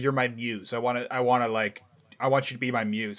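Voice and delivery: ordinary talk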